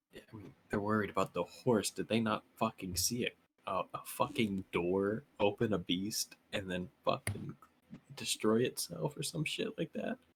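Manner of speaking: hushed, very quiet whispering. Whispering in character to Androck about the others' worry over the horse: whispering in character. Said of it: "whisper to Androck".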